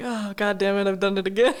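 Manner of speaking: ordinary talk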